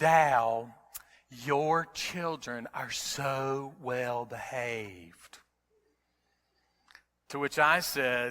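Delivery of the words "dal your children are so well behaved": sweet, very slow southern drawl, long "so". Retelling what Janet said to the speaker at a seafood buffet, in Janet's sweet southern accent. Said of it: "in her sweet southern accent".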